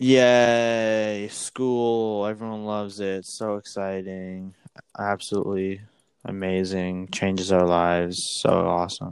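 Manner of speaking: slow sarcastic fake enthusiasm with drawn-out yay. Co-host talking about school starting, in sarcastic fake excitement. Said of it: "Can you hear the excitement in my voice?".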